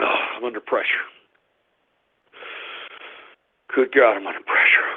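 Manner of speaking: sounding winded. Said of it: "My apologies if I sound a little winded".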